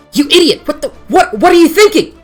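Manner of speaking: terrified, panicked vampire voice. Voicing a vampire in terror at a loud spell: terrified vampire voice. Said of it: "a look of pure terror".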